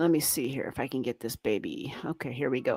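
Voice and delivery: soft unvoiced whisper, as an aside.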